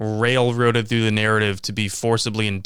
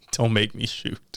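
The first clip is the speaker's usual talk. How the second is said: put-on crying, quieter; 5 dB quieter than usual. Describing a gif of a man holding a revolver, mock-crying Wesley Snipes. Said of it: "he's holding up the revolver and he's crying".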